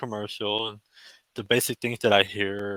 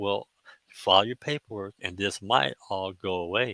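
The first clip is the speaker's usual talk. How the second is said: put-on whisper. Retelling what the judge whispered in the courtroom: imitating a whisper. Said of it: "she was whispering it kinda to me".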